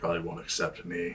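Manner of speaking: muttering under breath. In a role-play scene, a character following a path, muttering under his breath. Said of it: "He mutters under his breath".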